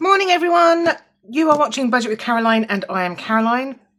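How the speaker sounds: loud, hoarse, croaky just-woken-up voice. Host opening the video shortly after waking up, croaky voice. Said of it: "Please excuse the croaky voice".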